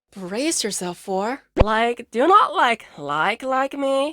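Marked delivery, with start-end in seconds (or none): 1.6-4.2 mock, put-on Valley Girl accent. Warning listeners before a demonstration, valley girl impression. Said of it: "[Valley Girl impression]".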